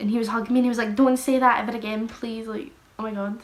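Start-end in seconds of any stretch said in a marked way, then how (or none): 1.0-2.5 put-on tearful, sobbing, crying pleading voice. Retelling a friend hugging and pleading: imitating someone crying while pleading. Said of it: "my boyfriend started crying".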